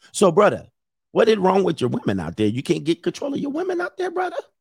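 fake Nigerian accent with swooping, sing-song lilt. The speaker addresses Nigerian men in a put-on Nigerian accent. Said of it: "This is my Nigerian accent".

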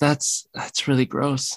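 put-on mutter under the breath. Retelling what a girl said to a boy: imitating a mutter under her breath. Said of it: "she just under her breath".

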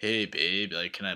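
low, put-on hunk voice. Showing the voice they use when making fun of hunks, the speaker does a mock hunk voice. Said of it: "I can't like walk into a bar and be like".

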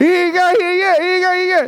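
put-on repeated shouting. Retelling what she kept shouting despite being told to chill out, imitating someone shouting. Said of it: "firmly but gently".

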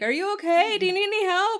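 loud, high-pitched yelling.

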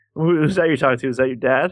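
ordinary delivery

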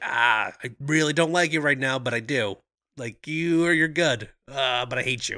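wry, smirking, conflicted, back-and-forth, grudging tone. Retelling a movie duel scene, imitating Yon-Rogg smirking. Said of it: "keeps, like, smirking".

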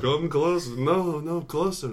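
hushed vampire voice. Playing a vampire who cannot move, calling someone closer: speaking very quietly as a vampire. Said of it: "I can only speak very quietly".

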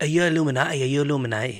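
fake accent from northern England. Speaker quoting what people always ask, in a put-on northern english accent. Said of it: "I don't know why I said that in a northern accent".

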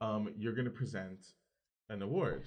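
ordinary delivery

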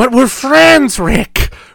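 very high, pleading voice. Recalling the scene where he's taken away, quoting his line to Rick: Peter Lorre impression. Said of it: "the impression of Peter Lorre that people do".

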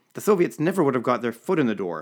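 emphatic, loud exclaimed line. A man talking Middle Eastern history with the narrator, exclaiming. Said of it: "he exclaimed".

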